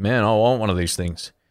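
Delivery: ordinary delivery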